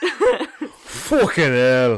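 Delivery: put-on slow British accent. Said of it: "that sounded British".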